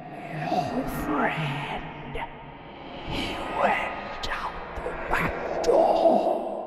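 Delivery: very slow, dry whispered voice. Narrator voicing the ghost answering the narrator's question, in a dry whisper. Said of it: "The man's voice was a dry whisper".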